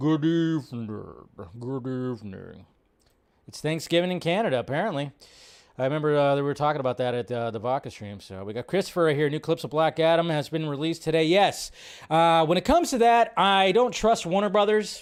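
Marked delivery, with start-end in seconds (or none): 0.0-2.6 deep, low, slow, drawn-out deliberate delivery. Greeting a viewer by name with an Alfred Hitchcock impression. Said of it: "my best, uh, Hitchcock impression".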